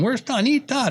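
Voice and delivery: loud, high-pitched calling yell. Retelling calling for a son from the kitchen: retelling own yell. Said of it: "and I'm yelling".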